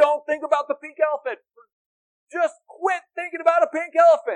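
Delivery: very loud, shrill, high-pitched yelling. Addressing the audience, demonstrating a repeated command by shouting. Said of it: "And now I'm shouting like".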